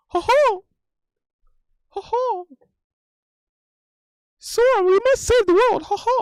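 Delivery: high-pitched, loud squeak. You have just announced [name] doing this voice; call to Sora in a Mickey Mouse voice. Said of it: "doing the Mickey Mouse voice".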